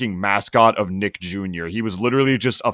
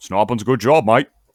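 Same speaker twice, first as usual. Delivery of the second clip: acted Australian cartoonish voice; 4 dB louder than usual. Attempting to do Rocko, in a bad Rocko Australian accent. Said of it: "Australian, bro".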